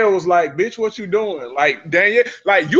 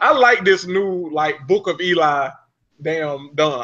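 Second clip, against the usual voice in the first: ordinary talk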